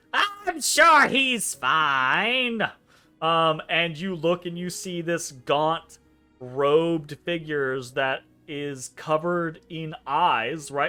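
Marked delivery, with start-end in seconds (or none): 0.1-2.6 cranky, grumpy, crotchety drawl, high and very slow. Narrating a story, voicing a robed figure who speaks up, in a crotchety voice. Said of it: "this crotchety voice goes".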